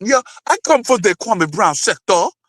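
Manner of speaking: mocking put-on Jamaican accent. Mocking a woman who claimed local ties: imitating a fake Jamaican accent. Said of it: "trying to talk like she a, a Jamaican".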